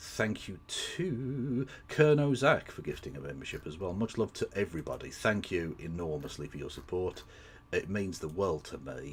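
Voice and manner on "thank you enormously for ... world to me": sarcastic-sounding delivery. Thanking supporters for their gifts, sounding sarcastic. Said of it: "why do I say it like I'm being sarcastic?".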